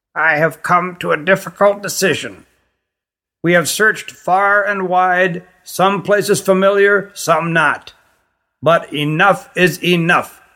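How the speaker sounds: severe, stern, thin reedy voice. After a pause, the queen goes on to the anxious visitors, stern, reedy voice. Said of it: "went on sternly in her reedy voice".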